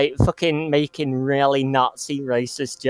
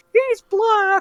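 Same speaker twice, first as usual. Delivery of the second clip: put-on excited exclaiming, higher pitch. Retelling a gameplay moment, imitating Phil. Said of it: "Phil goes".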